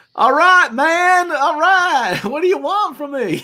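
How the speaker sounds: high, loud character voice, breaking into laughs. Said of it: "It's like a".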